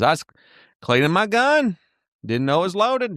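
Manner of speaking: imitated Southern accent. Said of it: "he had such a Southern accent".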